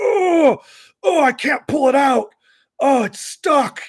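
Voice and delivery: very high, very slow faked straining. Retelling the video maker pretending his hat is stuck: imitating Kevin faking a struggle. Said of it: "he just completely fakes it".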